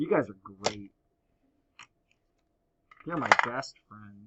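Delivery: heavily sarcastic tone. Teasing the class back after they joked about her: sarcastic. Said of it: "Just while we're being sarcastic here".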